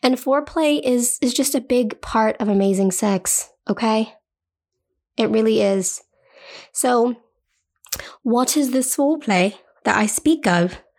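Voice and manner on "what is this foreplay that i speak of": put-on English accent. Speaker voicing the listener's imagined question, in a put-on english accent. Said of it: "in your English accent".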